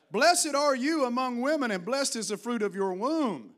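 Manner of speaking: loud, high-pitched, full-voiced shout. Reading a Bible character's blessing aloud, in a loud shouting voice. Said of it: "she shouted out with a loud voice".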